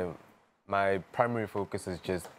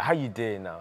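mock aggressive delivery; 2 semitones higher than usual. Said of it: "it's like a bit aggressive".

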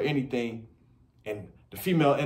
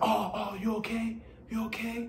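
weak, soft, apologetic, very slow voice; 9 semitones higher, 7 dB quieter than usual. Showing how men sound after hurting someone or making a mistake, in a sorry voice. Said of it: "It's the sorry voice".

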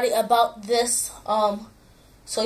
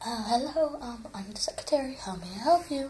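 creepy secretary voice, much quieter; 11 dB quieter than usual. Showing off voices to viewers, doing a creepy secretary voice. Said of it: "that one was... creepy".

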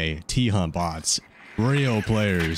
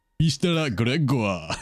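put-on Japanese anime-style accent, pitched up; 5 semitones higher than usual. Repeating the name Mr. Gregor, now adding the anime accent. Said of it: "Add like the anime accent to it".

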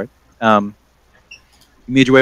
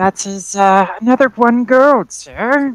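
put-on high old lady voice. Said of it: "the old lady voice".

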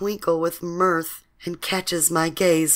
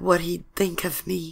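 ordinary delivery

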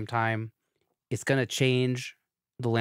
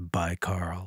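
grave, low, dead-serious tone; 4 semitones lower than usual. Ending an episode with goodbyes to Ben and Carl, in a very serious tone. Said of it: "switch to a very serious tone".

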